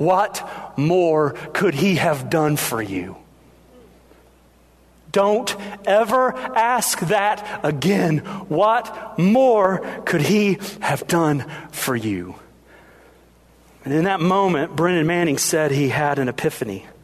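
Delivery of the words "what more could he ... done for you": put-on furious tone. Retelling how Ray's mother got in his face: imitating a furious tone. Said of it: "in a furious tone".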